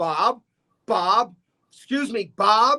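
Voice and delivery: slow, drawn-out call, yelled out. Speaker retells calling out the window to the man he named Bob, retelling a yell. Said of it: "Then I'd be yelling out the window".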